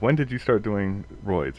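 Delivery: plain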